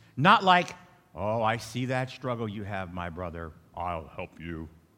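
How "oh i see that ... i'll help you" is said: very deep, low, holy-sounding, pious tone. Mocking a falsely humble offer of help: mock pious deep voice. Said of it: "With a deep voice that we try to mimic".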